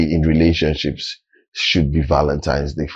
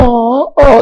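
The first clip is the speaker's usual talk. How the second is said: very high, delighted, swooning, gushing oh. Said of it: "everybody's like".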